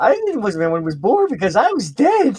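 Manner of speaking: mock cheerful cartoon hero voice. Retelling a cartoon scene, quoting the hero's cheerful line: jolly Goku voice. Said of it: "Goku says it in such a jolly way".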